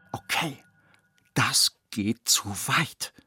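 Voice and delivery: very slow, deliberate whisper. Papa Wichmann speaks behind the closed bathroom door with the tap running: whispered. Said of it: "flüsterte Papa Wichmann".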